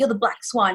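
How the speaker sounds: ordinary talk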